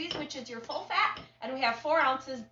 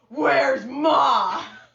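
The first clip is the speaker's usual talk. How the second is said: big, very loud booming yell; 12 dB louder than usual. Recalling a little girl yelling from the bus door: big voice. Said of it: "then she'd have this big voice".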